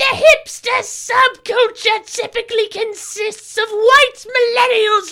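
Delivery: very high, shrill, loud cartoon villain voice. Taking a turn at voices, reading a passage in Cobra Commander voice. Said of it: "I'm gonna do Cobra Commander".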